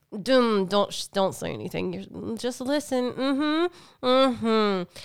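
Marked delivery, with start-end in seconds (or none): 2.3-4.8 put-on very slow sarcasm through clenched, gritted teeth. Recalling trying to stay quiet and just listen; mock-sarcastic through gritted teeth. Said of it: "let me just say like this sarcastic like".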